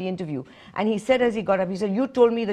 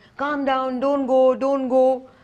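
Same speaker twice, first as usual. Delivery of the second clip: put-on imploring, cry-baby begging tone; 5 semitones higher than usual. Criticising an interviewer whose guest walked out, the speaker mimics them: mock-begging. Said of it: "then you're like".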